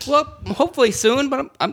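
high, laid-back, easy brush-off. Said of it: "I like the laid-back approach to the heckling".

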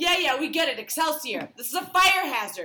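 loud, high, outright yelling. Retelling what they yelled at a man pointing at the shirt, retelling a yell. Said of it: "I just yell".

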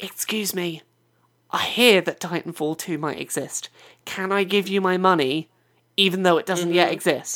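hushed whisper. Acting out talking to a cashier in a shop, whispering. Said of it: "You've got to like whisper to your cashier".

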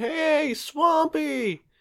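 high-pitched, loud yelling.

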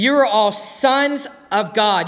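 very slow, deliberate, word-by-word reading aloud. Reading a bible verse aloud, the speaker pauses to read it very slowly. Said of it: "i'm going to read it slowly".

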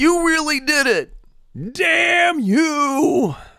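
put-on screaming. Pounding fists on the beach as an outlet, mock screaming at the sky. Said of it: "pound my fists on the beach and just scream".

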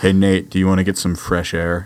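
low put-on character voice. Retrying the scene line, now in a Chuck Bass impression. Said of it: "Let me get my eyebrows up".

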